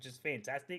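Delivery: ordinary delivery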